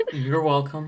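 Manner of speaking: disappointed. Replying to thanks for settling a discussion, disappointed. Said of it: "You sound so disappointed".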